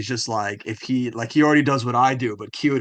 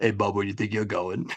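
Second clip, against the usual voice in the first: fast, deep cartoon-style baritone voice; 3 semitones lower, 5 dB quieter than usual. Describing a movie scene where a cabinet grabs Shrek, in a baritone cabinet voice. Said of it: "it's just like a baritone voice like".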